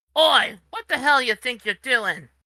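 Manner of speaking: squeaky, high-pitched voice. The one hit by a log curses at the party, squeaky cursing voice. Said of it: "curses at the party in a squeaky voice".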